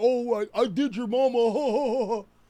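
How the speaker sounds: put-on childlike voice. Contrasting how a child would answer, imitating a childish kid. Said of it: "A child would have been like".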